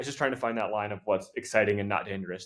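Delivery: ordinary talk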